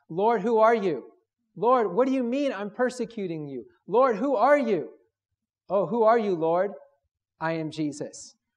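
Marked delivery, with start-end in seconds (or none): 0.1-6.7 play-acted crying out, calling upward. Retelling Saul of Tarsus crying out to God, acting out crying out. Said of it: "he's crying out to God in the heavens".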